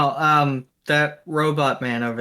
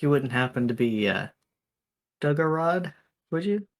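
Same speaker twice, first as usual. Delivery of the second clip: very quiet, hushed voice; 4 dB quieter than usual. A player's character approaches a lone orc and asks him, very quiet. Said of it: "I'm gonna say very quietly".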